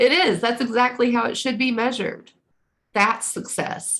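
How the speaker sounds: tearful voice, choking up, on the verge of crying. Reading a chart for Taurus rising, on the verge of tears. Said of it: "oh, I'm going to cry".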